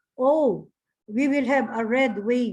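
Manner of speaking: ordinary talk, nothing marked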